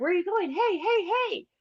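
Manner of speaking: mock very high-pitched screaming. Retelling a dream of being left behind: imitating own screaming. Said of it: "And I'm screaming".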